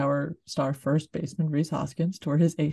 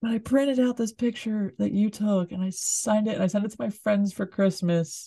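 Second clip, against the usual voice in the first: put-on loud call, pitched up, projected over noise; 6 semitones higher than usual. Retelling calling out to a photographer over a crowd, retelling a yell. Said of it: "as I'm yelling this over the crowd".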